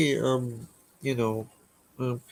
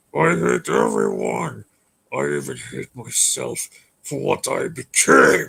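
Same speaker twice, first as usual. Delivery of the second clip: mock, rough, very angry, furious demon voice. Showing how the demon animatronic sounds when very angry, imitating angry Adrian. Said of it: "That's how how he sounds like when he's angry".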